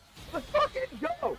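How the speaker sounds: excited voice breaking way up, cracking high. A player reacting in the moment to the final chase-down sequence, voice cracking. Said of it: "oh the voice crack".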